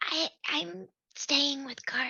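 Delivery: put-on very little, teeny, high half-whisper. Voicing a character during a shared story, teeny tiny little half-whisper. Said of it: "in a very little whisper".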